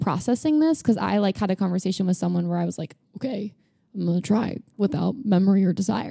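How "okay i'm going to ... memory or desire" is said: anxious, nervous, eager, trying-hard, determined voice. Retelling own past words in a conversation: imitating a nervous but trying-hard voice. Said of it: "sounds like somebody that's a little nervous, but also trying hard".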